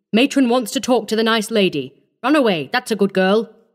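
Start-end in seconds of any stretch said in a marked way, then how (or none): none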